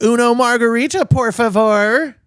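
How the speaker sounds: bad, very high, very slow, loud Valley Girl drawl with Spanish. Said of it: "a Valley Girl accent on it".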